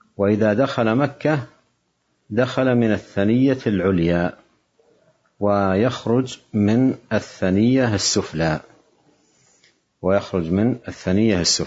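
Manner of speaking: ordinary talk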